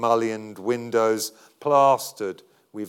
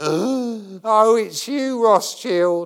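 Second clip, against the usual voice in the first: wheezing, very high, slow, drawn-out voice; 11 semitones higher, 4 dB louder than usual. Narrator voicing a man greeting a visitor, wheezing. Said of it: "he wheezes".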